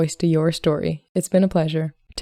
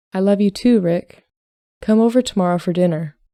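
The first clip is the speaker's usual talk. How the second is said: ordinary delivery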